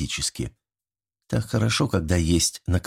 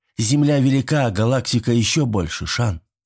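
plain reading voice

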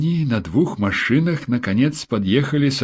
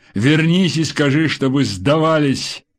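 firm, authoritative, commanding tone; 3 semitones higher than usual. The narrator reads Kulakov speaking to a crying woman, ordering. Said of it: "приказал Кулаков".

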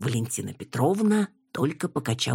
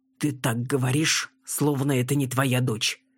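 ordinary delivery

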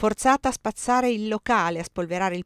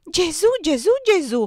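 very high, loud, horror-struck cry; 9 semitones higher, 5 dB louder than usual. A young woman reacts to a grave warning; terrified exclamation. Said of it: "esclamò atterrita".

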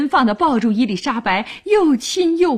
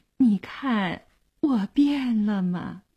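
soft, tender, deeply affectionate voice; 6 dB quieter than usual. Arms around someone's neck, a character asks tenderly. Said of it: "深情地问".

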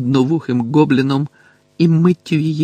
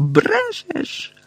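very high, shrill, screeching shriek; 4 dB quieter than usual. She answers Harry's taunt as her rage gives way to fright, shrieking. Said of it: "вереснула вона".

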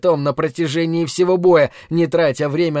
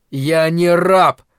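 words growled out; 4 dB louder than usual. Narrator voicing Khamar, stung by the taunt, answering his opponent, growling. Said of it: "Прорычал он".

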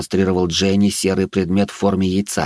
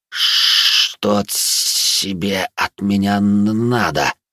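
guttural gurgle with hissed words, creature voice. Reading a story, a creature bares its teeth and answers: gurgling, hissing creature voice. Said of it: "утробно булькнул и прошипел".

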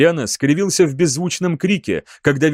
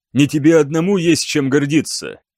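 plain reading voice

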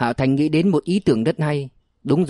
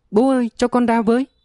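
very high, terrified, panicked shrieking scream; 9 semitones higher than usual. A boy trapped in a dark safe calls to his father, screaming in panic. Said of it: "Cậu hoảng sợ gào lên".

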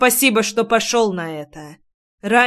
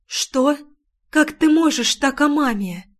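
stunned, high, hushed stage whisper; 5 semitones higher than usual. A daughter answering her father after he insults her mother; half-whispered. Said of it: "прошептала".

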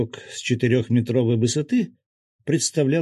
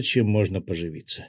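ordinary delivery

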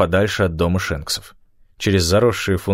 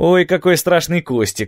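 very high-pitched, needling, sarcastic tone; 9 semitones higher than usual. Gabby mocks Manda for recoiling from a tumbleweed, a sarcastic jab. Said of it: "съязвил Габби".

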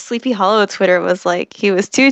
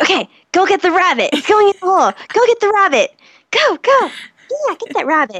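higher, coaxing talking-to-a-dog voice; 9 semitones higher than usual. Acting out sending a hunting dog after a rabbit: voice for talking to a dog. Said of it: "talking, like, in a dog voice".

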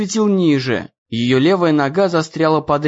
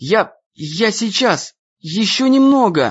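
muttered through clenched, gritted teeth; 5 semitones higher than usual. Reading a character tugging at a trapped leg, muttering through clenched teeth. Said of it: "Сжав зубы, бормотал Дэн".

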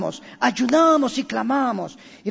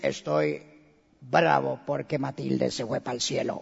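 very low, deep, creaky, rough possessed voice; 10 semitones lower, 6 dB quieter than usual. Retelling how a dead person's daughter suddenly spoke at the funeral, imitating a man's voice. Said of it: "cambia voz de hombre y dice".

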